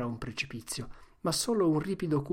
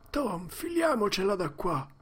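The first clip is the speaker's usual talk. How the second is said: high, quavering, trembling, frightened voice; 6 semitones higher than usual. Narrator reads Huck's line to Tom, in a trembling voice. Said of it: "disse con una voce tremante".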